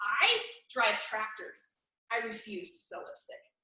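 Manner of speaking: very loud, extremely rude, snotty tone. Recounting your reply to a consultant's offer, retelling being rude to her. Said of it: "just being extremely rude to her".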